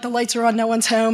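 ordinary talk

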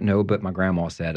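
usual speaking voice

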